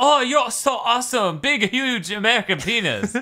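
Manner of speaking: weird, very high, slow, synthetic computer voice. Telling another speaker about a video game's weird voice, imitating Forza's computer voice. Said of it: "There is basically a computer voice that's like".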